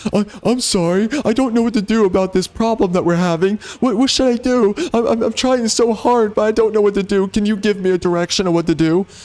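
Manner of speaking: timid, meek, stuttering, deferential, pleading voice. Mocking a game character who defers to the woman: mocking a meek deferring man. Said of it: "He's deferring to the woman in this scene".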